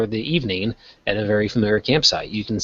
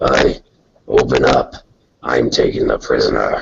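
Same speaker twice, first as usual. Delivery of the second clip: very low, very gruff, rough, deep and loud; 10 semitones lower, 5 dB louder than usual. Narrating a scene where someone comes to take the prisoner: very gruff voice. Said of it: "you hear a very gruff voice".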